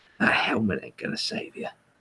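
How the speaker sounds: put-on hushed Australian-accented mutter, under the breath. Quoting a game character muttering to himself: muttering Australian accent as the Sniper. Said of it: "outback bushman Australian chap ... just muttering to himself".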